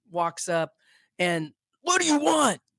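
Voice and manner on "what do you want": very high-pitched, loud yelling. Retelling a big security guard walking up to two kids at a tour bus, imitating the yell. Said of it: "like yelling".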